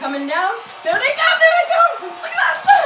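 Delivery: high, loud excited yelling.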